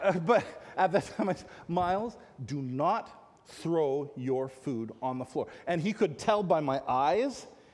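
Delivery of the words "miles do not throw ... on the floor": put-on serious grave tone, lower pitch. Retelling a warning not to throw food on the floor: retelling a serious warning tone. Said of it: "by my tone of voice, if nothing else, that this was serious".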